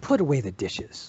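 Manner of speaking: hostile, contemptuous tone. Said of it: "and in that tone".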